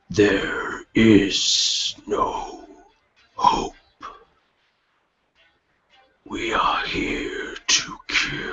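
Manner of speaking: whispered voice. A game master voices a whisper the players hear in their heads: whisper heard in the head. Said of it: "hear this this whisper deep into your head".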